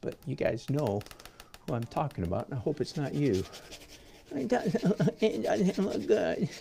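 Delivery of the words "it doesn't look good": exaggerated mocking whine, higher and slower. Imitating people the audience knows, exaggerated on purpose, in a mock whiny voice. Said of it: "I'm doing it worse just to make it the point".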